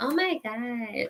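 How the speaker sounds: put-on childish, babyish baby-talk voice. Mocking a girl who talks like a baby when a man comes around, baby talk. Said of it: "Talking like a damn baby".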